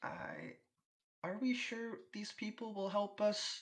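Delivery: very high, slow, halting, swooping elf voice. Voicing a shell-shocked elf who doubts the adventurers will help: faltering elf voice. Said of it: "he kind of just seems to be faltering".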